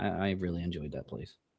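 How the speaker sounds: low, quiet, dry, dripping sarcasm. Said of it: "That was sarcasm".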